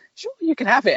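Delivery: small, tiny, very high little voice. Retelling an episode scene, quoting Marvin's reply: Marvin's little voice. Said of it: "he does his little voice".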